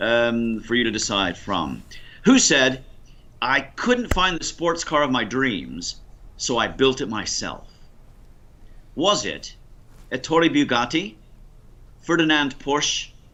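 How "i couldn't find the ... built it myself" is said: normal talking voice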